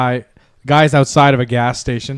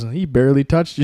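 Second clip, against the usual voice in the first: ordinary delivery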